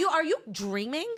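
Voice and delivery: angry, ranting telling-off tone. Retelling going off on an old man on a train: retelling telling someone off. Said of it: "going off on this guy".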